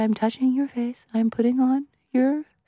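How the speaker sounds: soft ASMR voice. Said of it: "Do I sound like I'm doing A S M R?".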